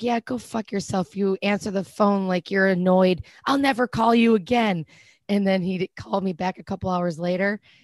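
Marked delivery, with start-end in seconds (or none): 0.0-4.8 put-on aggressive voice. Retelling a text sent to someone who answered annoyed: retelling an aggressive text. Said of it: "I just sound so aggressive".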